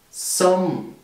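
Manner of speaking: som starts high and falls down. Teaching a tone where the voice starts high: falling tone on som. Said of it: "Fallender Ton. Du beginnst oben mit deiner Stimme und die Stimme fällt dann ab".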